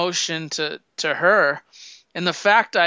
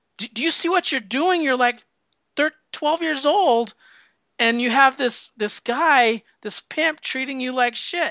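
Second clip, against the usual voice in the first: acted-out, high, raised-voice, outraged scolding rant. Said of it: "And he's like".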